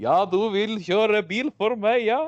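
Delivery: put-on Norwegian with an Arabic accent, high and loud. Talking about a favourite film, the speaker quotes its oil sheikh in Arabic-accented Norwegian. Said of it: "he speaks with the Norwegian Arabic accent".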